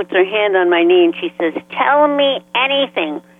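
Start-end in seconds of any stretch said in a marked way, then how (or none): 1.7-3.2 tiny, small, high little voice. Retelling what a woman said to him as the reading began, in her little voice. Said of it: "in her little voice".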